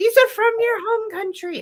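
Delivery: failed put-on British accent, pitched way up.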